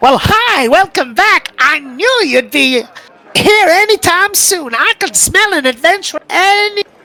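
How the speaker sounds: very high little gnome character voice. Voicing a gnome greeting returning customers: gnome character voice. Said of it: "this gnome says".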